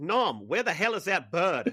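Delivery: lively, animated character voice with wide pitch swings. Quoting a favourite sitcom line, imitating the way Cliff talks. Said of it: "just the way Cliff talks".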